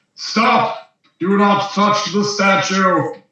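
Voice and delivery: disembodied, commanding voice. Game narrator voicing a voice from a shadow that stops a player reaching out, booming voice. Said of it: "you hear a voice boom out of the shadow's mouth".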